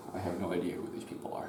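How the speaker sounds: fast whispered aside.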